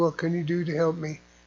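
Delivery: plain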